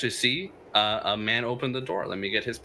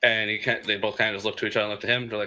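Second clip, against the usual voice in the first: ordinary talk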